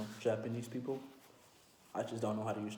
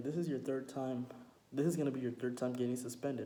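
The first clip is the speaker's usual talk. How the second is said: ordinary delivery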